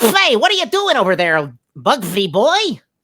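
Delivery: very high, loud, sing-song voice. Showing one of the cartoon voices you learned to do, in a Daffy Duck voice. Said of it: "Daffy Duck".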